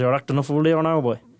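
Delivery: put-on deep Irish accent from Dublin. Imitating how the granddad would talk to them, in a deep dublin irish accent. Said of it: "Deep, like like I'm from Dublin".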